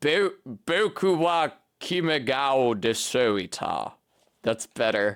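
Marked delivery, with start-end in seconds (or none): 0.0-3.9 very slow, drawn-out put-on British accent. Retrying a japanese phrase after finding it hard, in a british accent. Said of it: "with a British accent".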